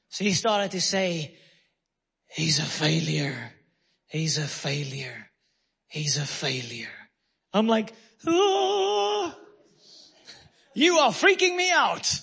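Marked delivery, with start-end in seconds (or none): 2.2-6.8 very deep, low, strange possessed-sounding voice. Retelling how a friend in the car began speaking in a funny voice. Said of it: "started to speak in a funny voice".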